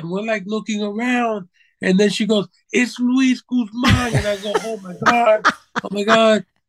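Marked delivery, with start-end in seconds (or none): 2.7-4.1 high-pitched, mild, small yell. Retelling a woman spotting someone across the room, imitating someone screaming. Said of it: "to the top of her lungs".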